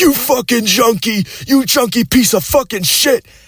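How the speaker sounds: enraged, shrill, furious screaming rant. Retelling a friend's angry dad yelling insults: imitating someone screaming. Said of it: "he was screaming at me too".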